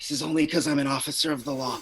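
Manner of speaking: whispering. Kneeling beside her and holding out a hand, you speak to her in a whisper. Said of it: "I'm just gonna whisper".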